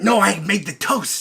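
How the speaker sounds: extra air on every single word. Trying impressions with the others, doing an almost half-whispering DeVito impression. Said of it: "He's almost whispering".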